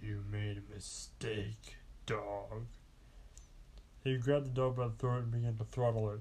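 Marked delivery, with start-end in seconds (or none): 0.0-2.7 very slow, deep voice like a demon. Purple Guy to the dog, in a low, deep demon-like voice. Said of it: "he said in a low, deep voice".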